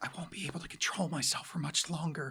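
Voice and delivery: hushed, seductive, tempting whisper. Quoting a character's line to the other speaker: Marceline whisper. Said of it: "She says in a whisper".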